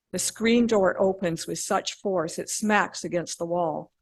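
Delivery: ordinary delivery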